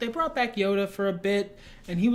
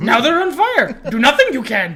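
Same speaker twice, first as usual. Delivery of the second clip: pitched-up, booming, loud movie-creature voice; 5 semitones higher, 11 dB louder than usual. Acting out a film scene after praising the Empire voice: Yoda voice. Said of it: "Empire Yoda is the best Yoda".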